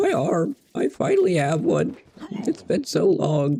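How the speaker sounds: overjoyed, weepy, tearful, joyful sobbing. Voicing Ryan after he finally gets an arm: Ryan crying tears of joy. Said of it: "crying out of te-, tears of joy".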